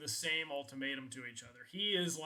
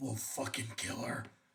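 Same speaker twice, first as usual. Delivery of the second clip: deep, demon-possessed, threatening demonic voice; 6 semitones lower than usual. Voicing a bloodied character in a game, in a deep demonic voice. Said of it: "he just goes in like a deep demonic voice".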